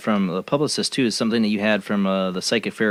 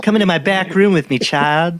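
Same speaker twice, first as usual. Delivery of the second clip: mock creepy camp man voice, higher, louder; 8 semitones higher, 6 dB louder than usual. Imitating a camp man who drew pictures: imitating a creepy camp man. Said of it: "He was just creepy".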